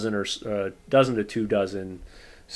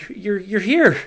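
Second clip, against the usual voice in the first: very loud, very high, trembling, quivering shriek of joy; 12 semitones higher, 8 dB louder than usual. Retelling the listener's father speaking as they come around the corner, imitating a quivering voice. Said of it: "in this very quivering voice".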